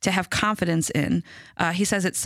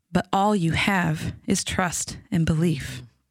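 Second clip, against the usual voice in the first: very soft, nearly under the breath. Retelling what grandma said at the table, very soft, under her breath. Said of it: "she said very softly, almost under her breath".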